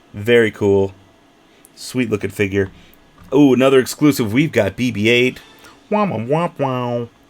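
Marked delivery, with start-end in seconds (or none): 5.9-7.0 put-on small rolling-robot droid sound. Showing off a new toy figure: best BB-8 impression. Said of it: "That was my best B B eight impression".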